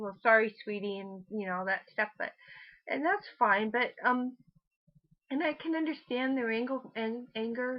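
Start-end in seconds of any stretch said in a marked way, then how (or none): none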